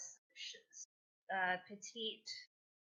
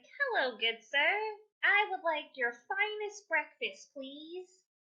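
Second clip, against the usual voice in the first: put-on very high, raised, petite girlish character voice; 9 semitones higher, 8 dB louder than usual. Voicing the same girl ordering breakfast from the bartender: put-on petite girl character voice. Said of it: "How am I gonna keep this up?".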